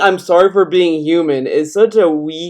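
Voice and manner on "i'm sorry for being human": ordinary talk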